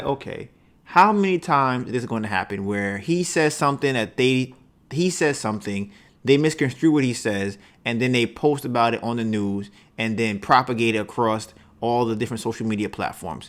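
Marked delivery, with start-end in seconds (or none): none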